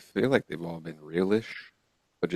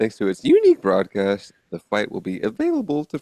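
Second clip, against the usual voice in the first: very loud, pompous, booming, swooping newscaster delivery; 3 semitones higher, 8 dB louder than usual. Reading a sports news article aloud, talking like a newscaster. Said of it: "Talking like a newscaster".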